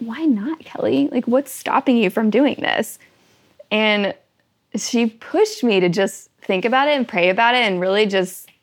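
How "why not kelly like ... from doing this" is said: put-on, very sweet-sounding voice. Speaker retells what a woman asked them, quoting in sweetest voice. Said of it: "in the sweetest voice".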